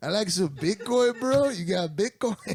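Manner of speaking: put-on Latin American accent.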